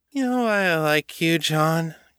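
put-on slurred drunken speech. Climbing the steps after leaving a bar, she speaks to John, slurred. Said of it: "[name] slurred".

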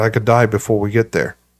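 normal talking voice

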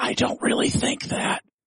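breathy, hushed whisper under the breath. Answering another speaker's reply after a joke insult, whispering. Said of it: "Are we whispering now?".

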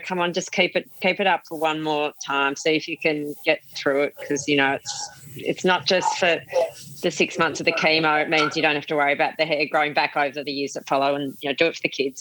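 ordinary delivery

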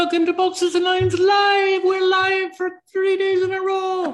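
bad put-on Irish accent. Welcoming everybody on day three of three live days: bad irish accent. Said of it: "it's as bad Irish accent".

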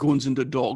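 imitated North London British accent. Answering a request to say a line in a British accent: British accent. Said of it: "say in a British accent".

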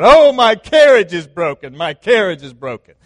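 loud, wailing, screamed delivery full of grievance. Acting out a traveler whose carriage broke down: screaming out in complaint. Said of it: "he screams out".

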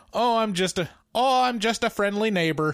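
put-on Midwestern accent. Imagining the character as originally planned: Mrs. Castevet with Midwest accent. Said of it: "originally the accent was supposed to be Midwest".

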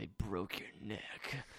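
breathy, hushed, whispered caped-hero voice. Retelling a Batman scene where Robin's neck is broken, Batman voice. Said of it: "it's Batman doing his Batman voice".

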